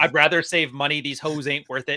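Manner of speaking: normal talking voice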